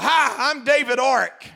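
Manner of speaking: put-on play-acted little kid holler, slow and drawn out. Retelling how a son in a stroller hollered at people in a mall: imitating a child hollering. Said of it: "he was hollering at people".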